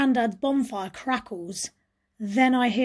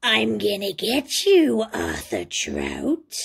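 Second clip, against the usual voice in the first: wicked, scratchy rasping voice; 2 semitones lower than usual. Narrating how Rose voiced Croaky in Grandad's attic: raspy wicked Croaky voice. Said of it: "she'd rasp".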